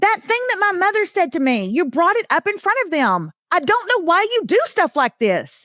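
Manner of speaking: hurt, resentful tone. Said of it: "That's how it would have gone".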